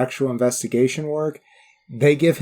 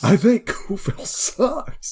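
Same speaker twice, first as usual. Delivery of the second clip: put-on mad, slow, pitched-up scornful voice full of stank; 8 semitones higher than usual. Quoting a movie line whose inflection you love, imitating a mad delivery with stank. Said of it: "Just the inflection he puts on that. There's just a lot of stank on there. He's so mad".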